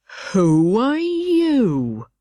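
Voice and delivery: drowsy, unhurried, languid voice, drawn-out "you". Narrating a story, the Caterpillar addresses Alice: Caterpillar's languid, sleepy voice. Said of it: "addressed her in a languid, sleepy voice".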